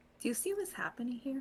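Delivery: barely audible, very quiet hushed whisper. Leaning close to another character during the scene: whispering. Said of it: "I'm whispering".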